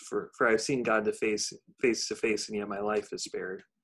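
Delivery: plain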